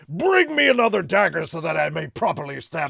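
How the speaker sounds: gruff, loud, rough, regal villain king voice. Retelling Corwin's line as the king, King Vegeta voice. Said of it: "it's literally his King Vegeta voice".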